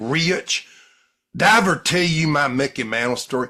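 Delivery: booming Southern yarn-spinning storyteller voice. Recommending a YouTube speaker and quoting him talking to Rich, Lou Vickery impression. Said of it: "I'm a diphthong to Lou".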